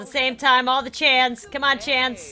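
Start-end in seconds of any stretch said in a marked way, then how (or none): none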